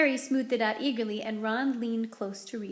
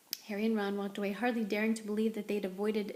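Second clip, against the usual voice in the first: ordinary delivery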